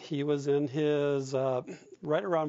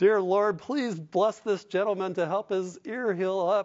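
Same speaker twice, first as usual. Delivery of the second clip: high, raised mock shout, straining to be heard; 5 semitones higher, 4 dB louder than usual. Speaker recounts praying aloud over a hard-of-hearing patient: retelling a scream. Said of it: "I was just screaming".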